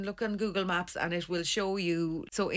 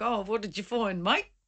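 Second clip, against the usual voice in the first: put-on, imitated Australian accent. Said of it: "Love the accents, by the way".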